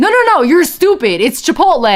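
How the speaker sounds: high, heated, insistent bickering tone. Retelling the other arguing voice's reply: imitating someone arguing. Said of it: "having an argument".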